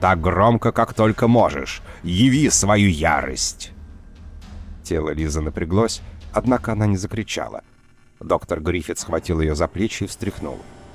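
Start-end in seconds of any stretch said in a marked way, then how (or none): 0.0-3.7 raised, loud, forceful and authoritative commanding tone. A doctor pushes his patient to scream: commanding, raised voice. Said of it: "властно возвысил голос".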